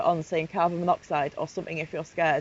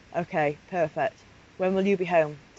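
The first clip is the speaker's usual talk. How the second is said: ordinary delivery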